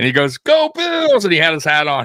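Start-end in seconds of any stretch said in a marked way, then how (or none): 0.4-1.2 put-on, shrieking, very high screamed yell. Retelling a stranger at a drive-thru turnaround: imitating a stranger screaming. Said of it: "So he's screaming".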